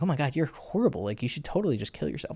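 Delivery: soft, playful, easygoing, funny-cool teasing. Retelling a remark made to a girl during a drinking game, in a funny, cool way. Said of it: "Because I said it in a funny".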